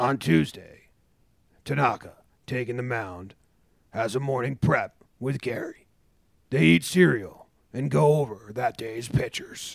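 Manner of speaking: documentary-series TV narrator delivery. Riffing about a pitcher with another speaker, doing a Homegrown narrator impression. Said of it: "get the homegrown narrator to do it like".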